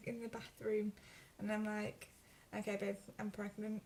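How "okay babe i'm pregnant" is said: ordinary talk, nothing marked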